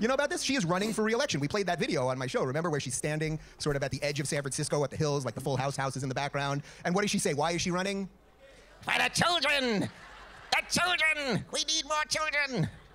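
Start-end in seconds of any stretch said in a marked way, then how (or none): 8.8-12.7 very high, slow, creepy villain voice. Imitating a politician's re-election video: Skeletor-like voice. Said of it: "She's like Skeletor".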